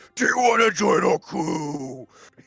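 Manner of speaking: furious, heated, high angry voice. Voicing a character asking someone to join the crew: saying it very angrily. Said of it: "He's saying that very angrily".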